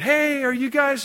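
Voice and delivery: put-on very high, frantic, panicked calling out. Retelling jumping out of the car to find some guys, re-enacting a yell. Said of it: "I'm yelling".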